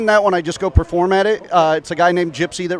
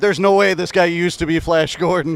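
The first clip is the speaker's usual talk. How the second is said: ordinary talk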